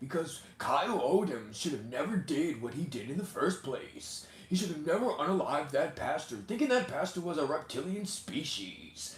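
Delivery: high on-air radio announcer voice. Showing how they read out video clips on the show, in a radio voice. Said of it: "give you out my radio voice".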